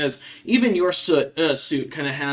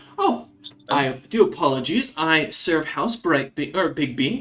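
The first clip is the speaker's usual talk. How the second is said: flustered, stuttering stammer in a put-on voice; 2 semitones higher than usual. Voicing a guest caught off guard by a player: stuttering in character. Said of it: "stutters and, like, fixes it".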